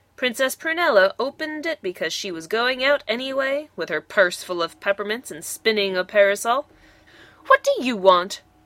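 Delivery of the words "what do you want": short, sharp, snippy, snapped tone. Princess Prunella, opening the door to a wise woman, snapping. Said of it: "she snapped".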